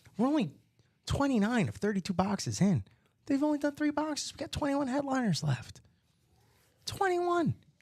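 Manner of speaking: hushed voice. Host pitches a box deal on stream, whispering so the site won't crash. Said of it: "we can get a little bit louder now".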